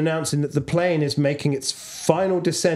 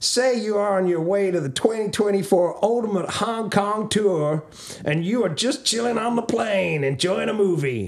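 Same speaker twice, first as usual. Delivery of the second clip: fake Texas Georgia accent, higher pitch; 4 semitones higher than usual. Reading out a listener question: put-on Southern accent. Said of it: "kind of accent is this?".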